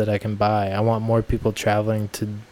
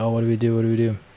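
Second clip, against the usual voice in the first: put-on panicked voices. Speaker retells how everyone at the van reacted after a man stormed off, retelling people freaking out. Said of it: "freaking out at the van".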